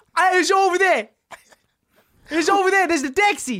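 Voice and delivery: very high, put-on Cockney accent. Improvising a scene as two cockneys looking for a taxi: Cockney accent. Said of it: "improv scene of us being two cockneys".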